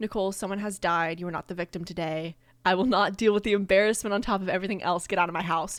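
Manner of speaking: ordinary delivery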